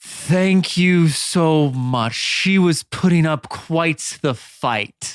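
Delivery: booming, echoing possessed voice. Narrator voicing a voice that booms through the pit, in a booming voice. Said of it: "you hear a voice boom".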